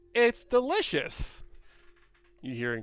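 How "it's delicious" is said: announcer-style delivery. Voicing a kenku repeating a heard phrase: announcer voice. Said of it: "announcer voice".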